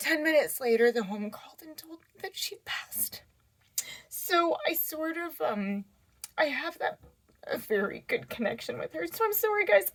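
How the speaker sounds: tearful, crying through it. Apologizing to listeners after telling of her grandmother's passing, crying. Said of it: "I can't believe I'm crying this much".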